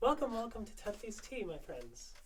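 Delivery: airy, light voice. Playing a tea shop owner greeting customers in a scene, wispy, light voice. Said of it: "She talks in a wispy, light voice".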